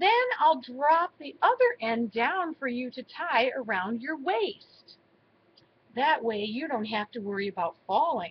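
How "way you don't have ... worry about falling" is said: ordinary delivery, nothing marked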